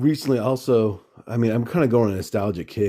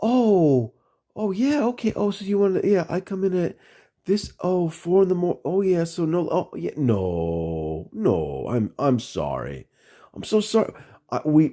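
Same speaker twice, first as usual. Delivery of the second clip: smug, fake-sorry, condescending tone with drawn-out "no"; 7 semitones higher than usual. Retelling a reply to management about coming in at four: imitating own condescending tone. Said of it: "I got to be condescending now".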